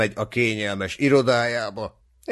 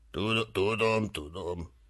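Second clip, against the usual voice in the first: muttered, mumbled, much quieter; 2 semitones lower, 9 dB quieter than usual. A character answers a donkey's remark, muttering. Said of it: "motyogta Perzeusz".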